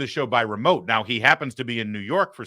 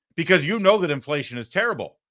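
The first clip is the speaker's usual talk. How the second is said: ordinary talk, nothing marked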